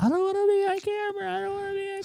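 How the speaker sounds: shrill, very high-pitched screaming shriek. Retelling a lady by a news crew outside Disneyland: imitating someone screaming. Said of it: "screaming, yelling".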